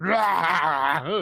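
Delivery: furious monster growl.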